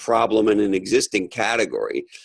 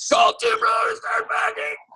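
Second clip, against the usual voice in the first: play-acted shrieking scream, very high-pitched. Retelling a commercial where a realtor bungee jumps off a bridge: imitating someone screaming. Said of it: "And he screams".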